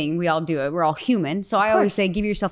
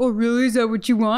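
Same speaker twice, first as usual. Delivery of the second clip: high, deliberately dumb, goofy, silly voice; 5 semitones higher than usual. Speaker retells answering him instead of getting critical, in a stupid voice. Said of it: "And I'll say it in that stupid voice".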